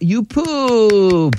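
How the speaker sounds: happy, high, stretched-out pooped. Showing how actors say the same words with different emotions, this time all happy. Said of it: "like all happy".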